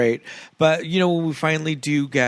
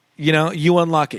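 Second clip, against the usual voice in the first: ordinary delivery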